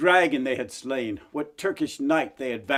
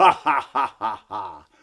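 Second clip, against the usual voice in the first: grisly ha-ha-ha laugh, very slow, very drawn out; 4 semitones lower, 4 dB louder than usual. Reading a story, the knight puts its head back on and speaks: grisly laugh. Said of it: "there he saw a giant of a knight, 3 times the size of a normal man, clad all in green armor, / there he saw a giant of a knight, 3 times the size of a normal man, clad all in green armor, from his hel".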